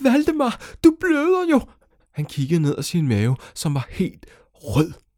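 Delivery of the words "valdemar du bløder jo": very high, loud shrieking scream. Valdemar's mother calls out to her son, screaming. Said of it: "så skreg hans mor".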